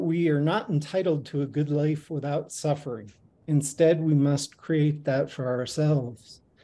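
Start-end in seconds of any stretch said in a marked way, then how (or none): none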